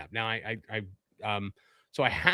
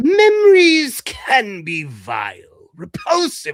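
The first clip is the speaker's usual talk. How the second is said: very high, loud, slow, swooping villain voice; 9 semitones higher, 13 dB louder than usual. Reminded of his impression from an earlier show, speaker performs a monologue; Joker impression. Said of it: "you did the Joker impression".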